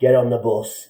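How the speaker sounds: put-on heavy Northern Irish accent, laid on thick. Retelling a man ordering him onto a bus; thick Northern Irish accent. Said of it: "in a really thick Northern Irish accent".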